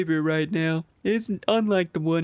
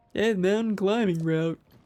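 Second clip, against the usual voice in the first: put-on video game cartoon cat character voice; 2 semitones higher than usual. Giving a character lines while chatting, in a Big the Cat voice. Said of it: "my Big the Cat voice".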